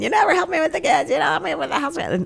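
very high, shrill, whining, nagging fishwife voice. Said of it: "that shrill fishwife voice".

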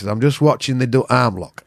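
put-on northern English accent. Retelling what a northern man watching the sparring said: imitating a northern accent. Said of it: "I picked up on the accent".

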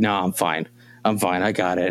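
mock winded, panting, breathless and wheezing voice. Retelling insisting to a helping brother he is fine: imitating being out of breath while wheezing. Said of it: "wheezing and sweating".

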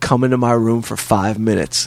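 ordinary talk

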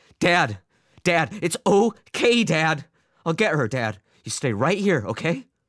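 frantic, hysterical, very high-pitched soothing tone. Albert speaks to his screaming father, hand on his shoulders: hysterical. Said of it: "matching his hysteria".

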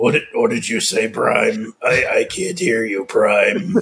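deep, low robot-villain voice pushed down. Demonstrating a character voice, addressing Prime, in a Megatron voice. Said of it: "That's more Marnosha Megatron".

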